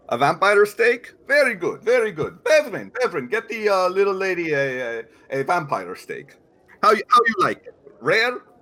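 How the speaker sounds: put-on vaguely Russian accent. A storyteller voices a character taking a player's order, in a vaguely russian accent. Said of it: "I am using a vaguely Russian accent".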